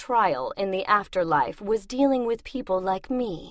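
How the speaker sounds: plain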